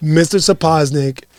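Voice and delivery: plain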